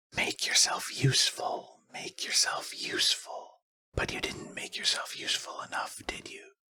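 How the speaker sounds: breathy, very hushed, hissing creature whisper. A narrator reads the creature's words whispered into a character's ear, hissing. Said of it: "The Grimble hissed".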